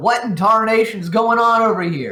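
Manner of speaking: very high, loud in-character yell. Yelling out in character to another character during a fight: yelling out in character. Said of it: "I'm gonna yell out to Glendale".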